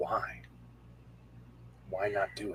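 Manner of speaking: hushed, very quiet whisper. Answering a man who flicked his eyes towards Kimberly: whispering back. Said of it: "like whisper back".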